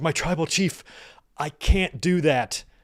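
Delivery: slow, tearful, blubbering wreck of a voice. Retelling a wrestling segment, imitating Paul Heyman crying. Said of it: "bludgering and he's crying".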